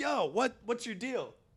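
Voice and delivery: mock heated, angry, very high-pitched voice. Retelling walking up to a honking car: imitating himself angrily confronting. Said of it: "angrily going up to this car".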